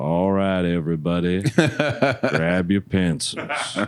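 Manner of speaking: drawn-out, unhurried, flat Texas drawl. Recalling an exam, the speaker mimics the proctor giving directions: slow King of the Hill voice. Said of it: "Talked really slow".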